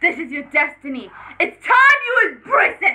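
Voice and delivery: grandly proclaiming villainess voice. Playing a guessing game, the speaker does lines from the show: Queen Chrysalis voice. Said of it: "I'm gonna do Queen Chrysalis".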